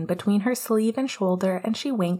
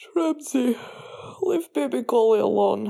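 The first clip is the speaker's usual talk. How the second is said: half-asleep, drowsy, heavy-lidded voice; 4 semitones higher than usual. Leaning back against someone's legs on the floor, he speaks sleepily. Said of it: "Cooney said sleepily".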